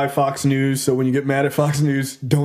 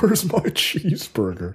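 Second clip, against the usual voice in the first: over-the-top, exaggerated put-on American accent. Joining in with a mock american accent. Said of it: "not hard to do an American accent".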